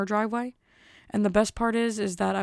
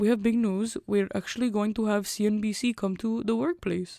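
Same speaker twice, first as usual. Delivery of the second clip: put-on Russian accent. Imitating the boss announcing news at work: imitating boss's Russian accent. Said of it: "he's, like, Russian, so he talks like this".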